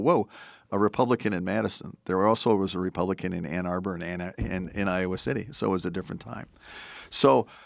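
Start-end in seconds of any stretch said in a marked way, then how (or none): none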